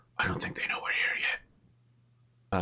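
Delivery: hushed, whispering dwarf voice. Voicing a dwarf who spots a light and warns another: whispering dwarf. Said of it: "is whispering to the first one".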